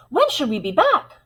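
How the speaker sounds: thrilled and eager. Demonstrating how one sentence can be said different ways, excited. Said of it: "Am I excited about it?".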